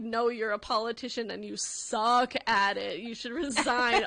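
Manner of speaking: angry, heated, going-off rant. Retelling a dream of going off on the governor: retelling ranting at someone. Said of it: "absolutely went off on her".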